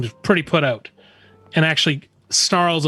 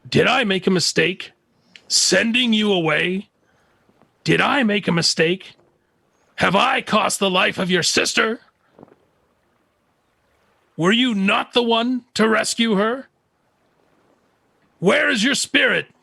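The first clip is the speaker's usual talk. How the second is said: high, furious, reproachful tone; 7 semitones higher than usual. Voicing a character who flashes with anger at a crying companion: angry. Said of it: "He flashes with anger, and he says".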